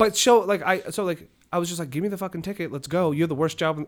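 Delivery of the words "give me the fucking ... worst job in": mock angry yelling, higher. Retelling yelling at a meter maid over a ticket: imitating own angry yelling. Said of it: "don't yell at the meter maids".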